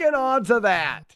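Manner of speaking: shouting in anger. Speaker asks why they are so angry today; angry yelling. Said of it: "Sorry for yelling".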